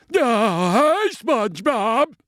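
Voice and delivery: very high cartoon voice, drawn-out, stretched "hi". Showing the others a Patrick impression: Patrick voice. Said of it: "here's my Patrick".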